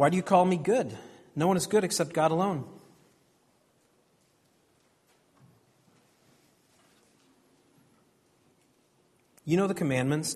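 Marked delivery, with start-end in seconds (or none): 1.3-10.3 long pause left hanging after "alone". Reading Jesus' words aloud, with a long pause after alone. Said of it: "I like to imagine a pause there before Jesus moves on. A pause between verses 18 and 19, sort of like this".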